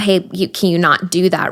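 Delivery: ordinary delivery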